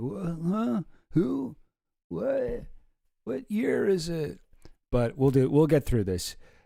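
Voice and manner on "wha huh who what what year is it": creaky, high, groggy, befuddled just-woken stammer. Acting out own grogginess after setting up last night: acting groggy and confused. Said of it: "kinda still groggy a little bit".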